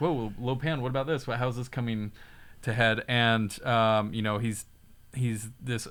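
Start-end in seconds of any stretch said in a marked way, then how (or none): none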